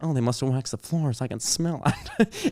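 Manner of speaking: offhand, animated, sing-song mom voice. Retelling what a classmate's mom said after her daughter fell: imitating the mom. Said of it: "this is exactly how she said it".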